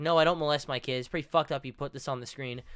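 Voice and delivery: plain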